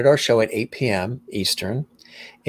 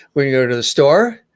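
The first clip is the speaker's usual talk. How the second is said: rising, question-like uptalk at the end on "store"; 4 semitones higher, 5 dB louder than usual. Describing speech styles, demonstrating uptalk: rising uptalk on "store". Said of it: "there's the uptalk where it goes uh, like".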